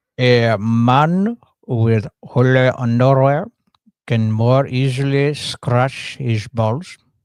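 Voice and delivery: mock Indian guru accent. Asked to say it like a guru giving wisdoms, in an Indian guru accent. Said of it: "can you say that in an Indian accent, like a guru giving".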